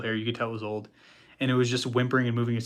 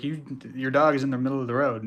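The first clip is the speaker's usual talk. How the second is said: ordinary delivery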